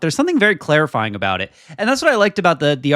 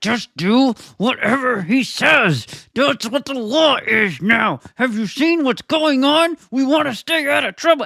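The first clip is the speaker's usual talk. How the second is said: very high, slow, spoken through clenched teeth; 10 semitones higher than usual. Retelling how a man talked about Trump and Paramount, imitating talk through gritted teeth. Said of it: "he's doing it like through gritted teeth".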